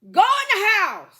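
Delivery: shrill, very high holler at full volume. Retelling yelling out a bus window at people walking off campus, retelling a yell. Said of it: "I yelled out the window".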